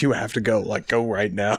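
acted, mad, worked-up angry tone. Recalling a man who got so mad at them, imitating his anger. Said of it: "he got so mad".

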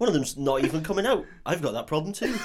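put-on West Country accent. Joking as Stephen Merchant's Caliban greeting Wolverine: Stephen Merchant West Country voice. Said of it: "He's just full West Country Caliban".

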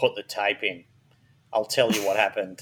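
very deep, dropped-down put-on voice. Telling a true-crime story to the others, the speaker quotes a woman's confession in a very deep voice. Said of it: "She's got very deep voice".

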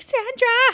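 very high, loud, top-of-the-lungs yell. Retelling a scene where he calls Sandra: imitating someone yelling. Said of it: "yelling at the top of her, his lungs".

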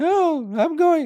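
very high-pitched, loud, mocking voice. Retelling Pat Mahomes telling his coach he is going out there, high mocking voice. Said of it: "High bitch voice".

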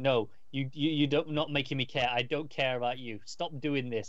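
mock screaming, put-on scream. Recapping a scene where a man kneels by an empty grave, retelling a scream. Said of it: "And he's screaming".

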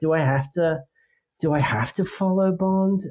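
put-upon and over it. Voicing a figure on a poster, imitating someone fed up. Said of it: "so, so over it".

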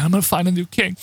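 sadly imitated voice. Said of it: "he's just like".

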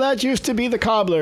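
poor put-on Dutch accent. Imitating a Dutch guy from centuries ago complaining, in a bad Dutch accent. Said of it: "that's my bad Dutch accent from the 1600s".

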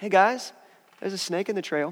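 calm, soft, matter-of-fact, no-big-deal tone. Retelling a walk on a trail when someone spotted a snake, imitating a calm warning. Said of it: "She says it all calm".

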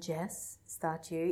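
slow, creeping, creepy calling voice. Retelling a film scene where a killer creeps around calling: imitating a creepy stalker. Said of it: "creeping around the basement going".

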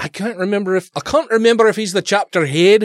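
short slip into Scottish accent. Answering whether someone is the chapter head: slipped into a scottish accent. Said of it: "I slipped into a Scottish accent there".

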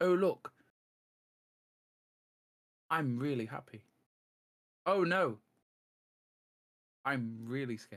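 level, flat, emotionless deadpan monotone. Speaker demonstrates always talking in the same voice, flat monotone, no emotion. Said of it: "I'm not surprised or I'm even excited or even scared any time".

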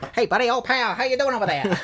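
put-on old-timey 1940s movie voice. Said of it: "Coen Brothers movie where they talk like that".

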